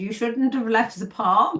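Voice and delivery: bad fake Dutch accent sliding into German. Retelling what the man on the door said, bad dutch accent. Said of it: "There's German Dutch accent".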